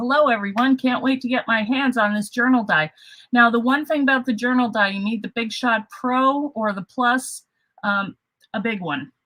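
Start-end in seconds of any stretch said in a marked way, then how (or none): none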